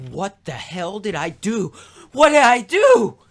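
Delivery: mock horrified, high, drawn-out rising cry of disbelief. Retelling a scene where a character returns with blood on his hands: acting horrified. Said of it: "horrified about the, this, the blood on his hands".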